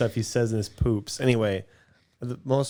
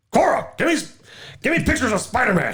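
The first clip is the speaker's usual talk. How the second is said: put-on irritated, angry voice, pitched very high; 12 semitones higher, 3 dB louder than usual. Told to try being angry, demanding pictures of Spider-Man: angry J.K. Simmons impression. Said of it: "You could try being angry".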